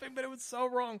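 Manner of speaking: very high giggling, laughing through words. Retelling a school memory, laughing while talking. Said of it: "Sorry, I'm laughing".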